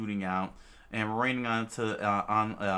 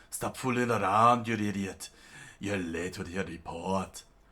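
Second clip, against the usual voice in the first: imitated Scottish accent. Voicing Mister Zero scolding someone for a late report: Scotsman voice. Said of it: "He'll get the Scotsman voice".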